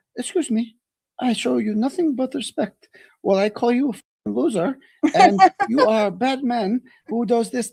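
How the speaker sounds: steady, slow, polite-sounding calm, unraised voice. Acting out how she always takes shots at people, mock-calm, not raising voice. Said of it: "because they're not raising their voice".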